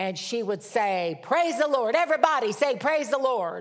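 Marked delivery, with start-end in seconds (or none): 1.2-3.6 put-on North Carolina southern accent. Retelling a loud woman from north carolina addressing everybody, southern accent. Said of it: "she'd say with a southern accent".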